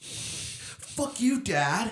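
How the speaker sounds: very high, angsty emo tone. Joking that the whole podcast should be done in emo voice. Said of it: "like, emo voice".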